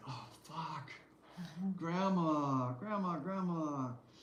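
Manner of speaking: wilting, embarrassed, high, drawn-out mortified groan. Retelling a grandmother embarrassing her grandson, imitating the kid wilting. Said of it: "He's just wilting like".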